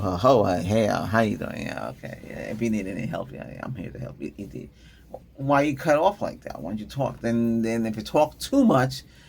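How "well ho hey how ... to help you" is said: put-on mumbled, indistinct speech. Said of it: "he mumbled it".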